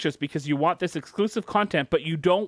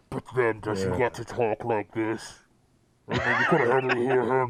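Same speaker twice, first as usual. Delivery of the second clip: muffled villain voice, pitched much lower; 5 semitones lower than usual. Joking about wearing the Bane mask on Fridays, speaker switches to a Bane impression. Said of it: "that was my Bane impression".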